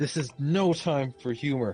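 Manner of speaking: snarled delivery. Voicing a priest who snarls at the players: snarling. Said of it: "the f- priest snarls a bit towards you and says".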